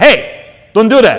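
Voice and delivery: loud, high, sudden shout.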